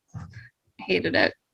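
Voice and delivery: barely audible whispered grumbling mutter. Answering thanks for repairing the ship: muttering under breath. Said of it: "very under my breath".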